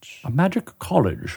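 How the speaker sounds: put-on British accent. Repeating a phrase just said by the other speaker: put-on British accent. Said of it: "I had to say that in a British voice".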